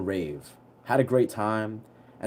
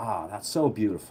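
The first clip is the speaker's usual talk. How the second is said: put-on chill, relaxed, lower, quieter, slower; 4 semitones lower, 5 dB quieter than usual. Retelling how a guy reacted to the sound of the flute, imitating someone really chill. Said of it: "to being like really chill".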